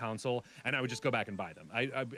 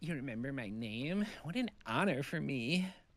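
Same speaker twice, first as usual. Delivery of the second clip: very slow drawl, dragged out with extra sass; 4 semitones higher than usual. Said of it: "she's just a little sass, extra sass".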